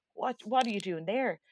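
normal talking voice

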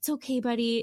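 put-on soothing, comforting voice. Retelling how Aaron comforted an upset Emmett: imitating Aaron comforting Emmett. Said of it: "he was like".

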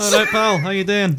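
loud, very high-pitched put-on Scottish accent. Retelling a video where the characters greet the camera, in a scottish accent. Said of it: "all of them have Scottish accents".

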